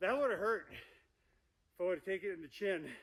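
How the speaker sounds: panting while talking. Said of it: "why I'm panting".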